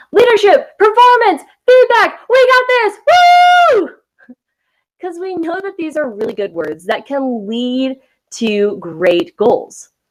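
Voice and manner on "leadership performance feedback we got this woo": put-on very high, loud hype holler, drawn-out. Imitating organizations and leaders who sound like the young player: imitating leaders yelling.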